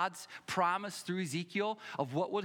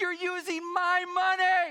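acted, very high, loud crying child wail; 13 semitones higher, 7 dB louder than usual. Retelling what a crying child said to the speaker: imitating a crying child. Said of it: "he starts crying".

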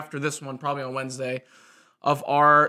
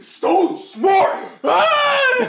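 startling, very high, very slow, drawn-out sudden yell; 7 dB louder than usual. Correcting another speaker about a player's name: sudden loud shout. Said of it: "You scared the dog".

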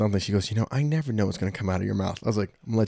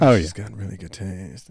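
imitated, put-on lowered voice. Repeating the co-host's remark back to them, mimicking a lowered voice. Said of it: "lowered like your voice a little bit".

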